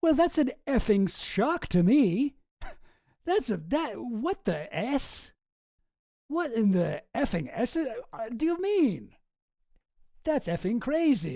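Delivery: fake surprise, very slow. Mocking a deposition answer about stolen money: mocking Wexner's fake surprise. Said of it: "If you're really surprised, you wouldn't say effing".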